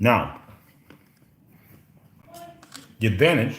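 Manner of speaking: muffled speech with mouth full of food. The speaker, mid-snack at almost two o'clock, talks with mouth full. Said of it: "sorry, mouthful".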